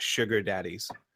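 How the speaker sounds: plain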